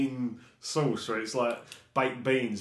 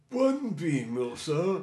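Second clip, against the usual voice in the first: put-on posh high-end butler voice, higher; 4 semitones higher than usual. Playing a server at a high-class diner taking a customer's order, posh butler voice. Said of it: "it's like a posh high-end one".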